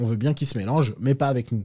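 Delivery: ordinary talk, nothing marked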